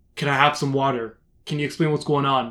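ordinary talk

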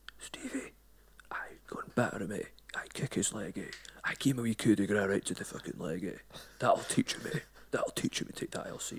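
breathy, hushed, whispered mum voice. Retelling a plane trip, imitating the mum urging her son. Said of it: "She's like".

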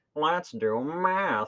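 high silly voice, math drawn out. Describing a confusing game to the other speaker, doing a Baldi's Basics impression. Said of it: "That's my official Baldi's Basics impression".

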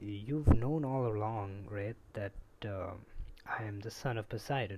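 ordinary talk, nothing marked

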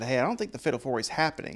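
plain

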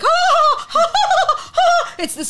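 delirious manic laughter, very high-pitched and slow. Describing a scene he watched, the speaker is imitating Brian's laughter. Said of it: "He laughed like that for".

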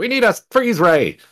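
very high-pitched, loud yell. Playing Phaedra as the space station shakes in a meteor storm: Phaedra yelling. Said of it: "Phaedra yells out".

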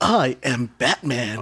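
laid-back surfer voice. Retelling a movie trailer line: Keanu Reeves voice as Batman. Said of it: "that Keanu Reeves voice".

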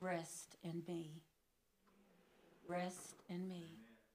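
hushed, still, quiet voice. Recounting a frightened prayer and the answer heard, still, quiet voice. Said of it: "his still, quiet voice".

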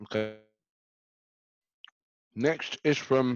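slow talk through a mouthful while chewing. Reading out the next listener question, talking with mouth full. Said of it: "I got a mouthful of food".

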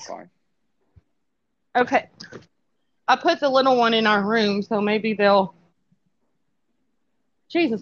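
breathless, out of breath. Explaining she just put the little one in the room, out of breath. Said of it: "I'm out of breath from chasing them".

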